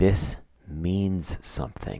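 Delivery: put-on, creepy, eerie, deeply unsettling delivery. Quoting a dubbed film's father looking at his mashed potatoes: mimicking a creepy line. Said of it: "in the creepiest way".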